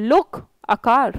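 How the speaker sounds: brief comma-like pause after "look". English lesson on a comma after look: pause after look. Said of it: "लुक, उसके बाद comma यहाँ पर इसलिए लगाया है ताकि जैसे मैं बोल रही हूँ ऐसे बोलिए".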